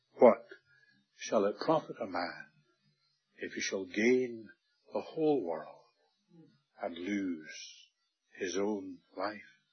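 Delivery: gentle, tender, sorrowful voice with broken, halting phrasing. A speaker leaves the audience a little word: tender and sad. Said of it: "I say it tenderly, and I say it sadly".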